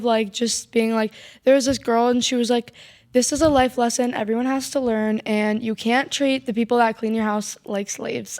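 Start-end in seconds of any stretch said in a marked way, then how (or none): none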